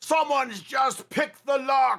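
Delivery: shrill, very loud, very high, blaring shout. A game master voices a face appearing on a door, very loud voice. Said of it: "says in a very loud voice".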